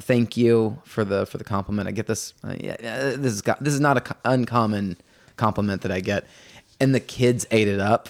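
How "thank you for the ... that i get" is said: usual speaking voice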